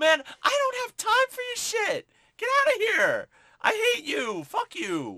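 very high, loud, swooping shouted brush-off tone. Retelling a movie scene where Strike brushes off Tyrone: imitating Strike yelling. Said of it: "he's, like, yelling at".

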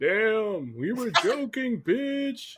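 ominous, menacing, high-pitched voice from the background. Voicing a background voice after a player has done her dare, sounding ominous. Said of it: "ominous as fuck".

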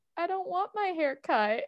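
put-on defeated voice. Retelling a character's line while recapping a scene: imitating a defeated tone. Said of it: "he's so defeated".

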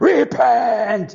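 rough, booming scream at half force. Recalling a man on the school bus, retelling his loud, booming scream. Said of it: "he'd scream out".

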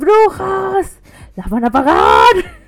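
put-on high, very loud, very slow swooping old woman yell. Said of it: "le gritaba a las enfermeras".

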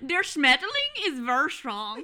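very loud, swooping, put-on German accent. Trading accents with a friend, the speaker shows off a German accent. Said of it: "Hear my German accent".

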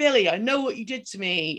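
loud, yelled, repeated shouting in a man's voice. Retelling a phone call from a screaming man: retelling a man's shouting. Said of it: "he's like shouting and shouting".

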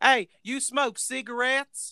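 heavy put-on Southern accent, very high-pitched. Retelling a woman asking Marco about cigarettes, imitating her thick Southern accent. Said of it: "she's got a thick like southern accent".

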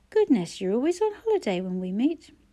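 plain reading voice

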